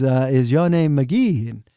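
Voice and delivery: mock, put-on broken-English speech. Retelling what a man stepping up to his drums asked, imitating broken english. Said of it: "in a broken English".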